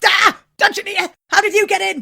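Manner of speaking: overenthusiastic, high-pitched and loud with overdone eagerness. Imagining Treguard turning round to see the Dungeoneer: overenthusiastic Treguard impression. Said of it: "He's just obviously overenthusiastic".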